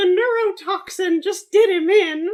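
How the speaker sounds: squeaky, high-pitched and loud. Continuing a bit for the others, in a Mickey Mouse voice. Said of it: "I can do a really great Mickey Mouse".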